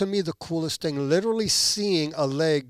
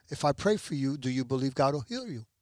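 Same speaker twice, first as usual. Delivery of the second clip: ordinary talk, nothing marked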